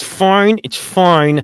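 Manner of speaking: very high voice forced through gritted teeth. Game master reacting to news of players who never played before: through gritted teeth. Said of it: "he says through gritted teeth".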